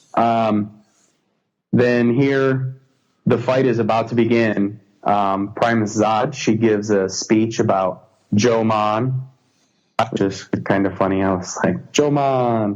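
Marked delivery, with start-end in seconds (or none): 11.9-12.7 a touch of put-on Jamaican accent. Retelling own reaction to a name in a speech: Jamaican accent. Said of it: "Get a little Jamaican accent going on".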